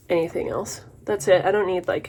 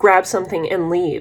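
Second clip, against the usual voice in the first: plain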